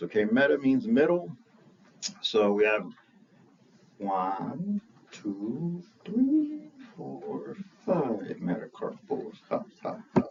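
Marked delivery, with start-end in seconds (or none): 4.0-10.2 drawn-out, slow, swooping put-on vampire voice with laugh. While going over hand bones, counting the metacarpals in a Count impression. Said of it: "Like the count on Sesame Street".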